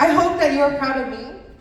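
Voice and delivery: tearful voice, words coming through crying. A daughter thanks her parent and says she hopes they are proud, tearful and crying. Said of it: "Sorry, I'm crying".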